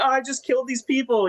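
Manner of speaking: acted, very high, tearful, weepy sobbing voice. Comparing a character in a show and the comics: imitating Oliver crying. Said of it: "he's, like, crying".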